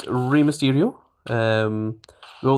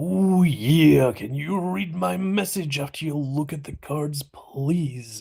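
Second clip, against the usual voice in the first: gruff, put-on pro wrestler voice; 3 semitones higher than usual. Reading someone's message aloud in Macho Man Randy Savage voice. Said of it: "I'll read your message in the voice of the Macho Man Randy Savage".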